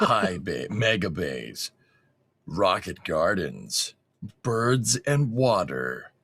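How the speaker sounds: put-on narrator voice, mock voice-over narration. Watching a launch video, reading out the locations as its narrator: put-on narrator voice. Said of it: "I'll do the voice for this".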